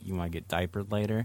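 barely audible, very hushed soft half-whisper. Acting out a line to say to someone: pretend half-whispering. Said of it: "if you just whisper in the air".

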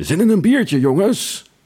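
bright, cheerful, friendly voice, very high. Reading a story aloud, the narrator voices the bar owner Tom: cheerful, imitating Tom. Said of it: "Vraagt Tom vrolijk".

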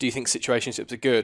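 plain

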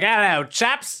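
put-on English peasant accent. Playing an English person saying hello: put-on English accent. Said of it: "just a peasant from England, you're like".

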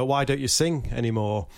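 plain

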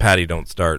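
ordinary talk

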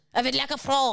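put-on French accent. Friends trying French accents together: French accent. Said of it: "You're really good".

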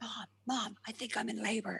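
quiet, soft, high-pitched hushed calling voice. Retelling knocking on Mum and Dad's door at night: retelling speaking really quietly. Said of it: "knocking on Mum and Dad's door really quietly and going".

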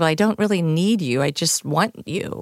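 ordinary delivery

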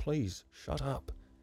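said quietly. A man answers a boy shouting about a pretty woman, said quietly. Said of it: "he swore, said quietly".

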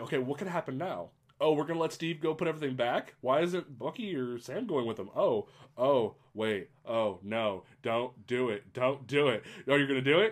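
plain

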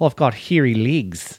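put-on casual South African accent. Recalling a call-center coworker from south africa, imitating a south african coworker. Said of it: "He went".

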